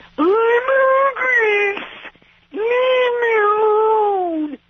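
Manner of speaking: shrill, very high, very slow, drawn-out crazy voice. Retelling how someone used to say things: imitating her crazy voice. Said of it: "you do these crazy voices?".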